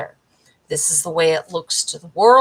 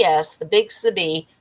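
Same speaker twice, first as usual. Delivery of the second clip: ordinary talk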